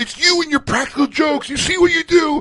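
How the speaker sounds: re-enacted yell. Retelling a practical joke, the speaker re-enacts yelling at two people: retelling a yell. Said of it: "and I start yelling".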